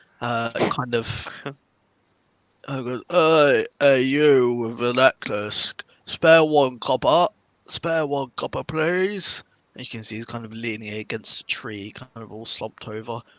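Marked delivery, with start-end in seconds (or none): 3.1-9.4 put-on loud, very drunk-sounding pleading. Narrating a scene, the speaker voices a man begging players near a forest, very drunk man. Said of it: "very, very drunk man".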